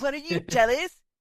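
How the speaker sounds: put-on bratty little-kid voice. Acting out a One Piece chapter scene: idiot little brother energy. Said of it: "channel my three idiot little brother energy".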